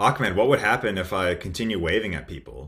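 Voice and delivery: ordinary talk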